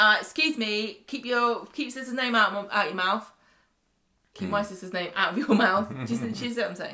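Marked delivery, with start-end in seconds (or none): 0.0-5.9 play-acted loud, unapologetic, defiant scolding tone. Imitating Leanne standing up for herself about her sister. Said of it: "because she's going around going".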